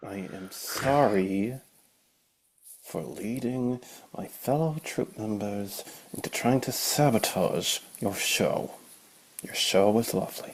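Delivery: softly spoken, quiet, drawn-out sorry. A troop member delivers an apology to the group, quiet apology. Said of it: "you don't have to be quiet for that one".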